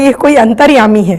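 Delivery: ordinary talk, nothing marked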